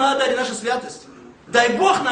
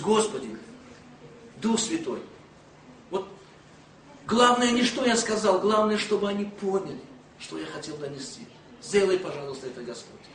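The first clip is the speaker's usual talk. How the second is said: soft, low murmur under the breath. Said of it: "а этой стороной молюсь".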